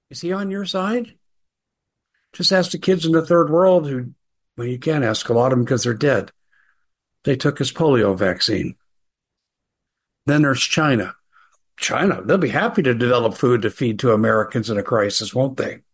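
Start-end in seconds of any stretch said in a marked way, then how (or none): 11.7-15.7 ironic, sarcastic voice. Speaking to an audience about whether he is on their side, sarcastic. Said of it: "Being sarcastic".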